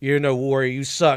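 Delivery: monster voice of an orc. Acting out what the orc should say to his ally: voicing the orc. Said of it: "the orc should punch him and go".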